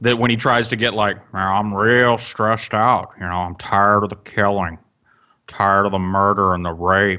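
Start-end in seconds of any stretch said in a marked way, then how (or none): 1.3-7.2 low, torn-up, stressed-out lamenting voice. Mocking someone who tries to sound upset: imitating Brett's tore up voice. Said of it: "I love the Brett tore up voice".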